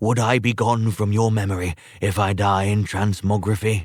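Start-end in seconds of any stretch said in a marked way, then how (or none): none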